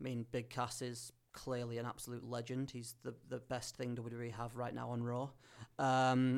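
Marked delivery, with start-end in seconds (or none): none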